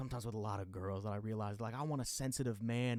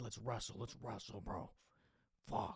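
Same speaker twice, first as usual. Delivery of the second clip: put-on acting out a drunk, angry man voice; 5 dB quieter than usual. Retelling a run-in with a man, the speaker is imitating a drunk angry guy. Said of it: "he's all drunk and he's mad at me".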